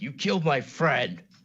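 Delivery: shrill, high, loud screamed words. Playing a character attacking someone who killed a friend: screaming. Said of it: "I'm just gonna scream".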